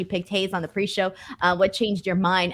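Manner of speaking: ordinary talk, nothing marked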